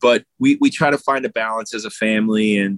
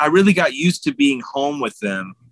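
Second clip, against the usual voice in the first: ordinary delivery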